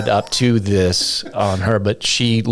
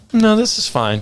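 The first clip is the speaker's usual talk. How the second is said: put-on strained, forced calm, pitched very high; 12 semitones higher than usual. Describing a panicked inner scream behind an outward face, mock forced calm. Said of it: "That meme, the thing on fire".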